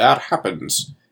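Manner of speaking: put-on bad Welsh accent. Recounting a movie scene, quoting an actor's line in a bad Welsh accent. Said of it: "in his worst Welsh accent".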